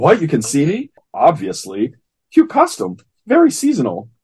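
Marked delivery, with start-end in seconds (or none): 0.0-0.9 play-acted stunned, incredulous, disbelieving outburst. Retelling a comic scene where a character is suddenly seen: acting incredulous.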